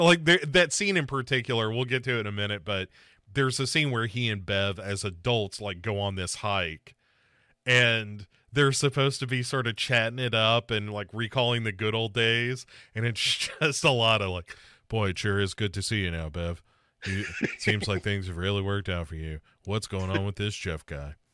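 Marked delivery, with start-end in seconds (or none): 14.9-21.1 fast, lowish mock monotone. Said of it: "it's real monotone".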